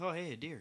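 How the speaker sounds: play-acted casual, unbothered, offhand tone. Retelling a friend in the passenger seat spotting a deer: imitating a nonchalant tone. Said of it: "just like that, all nonchalant".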